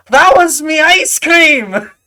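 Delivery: very high, shrill, loud, angry goblin voice. Narrating a scene, the speaker voices a goblin pointing at the players: goblin voice. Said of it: "the goblin slams her hands on the table".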